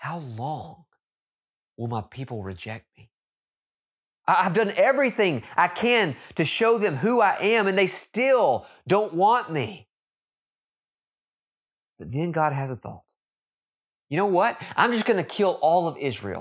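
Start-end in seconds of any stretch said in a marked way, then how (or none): 0.0-9.9 performing mock heartbreak, heartbroken tone. The speaker retells God speaking to Moses about his people, acting out heartbroken words. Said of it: "you can hear the heartbreak in His voice".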